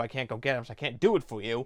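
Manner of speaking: ordinary delivery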